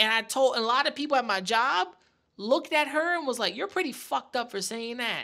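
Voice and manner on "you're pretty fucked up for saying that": ordinary delivery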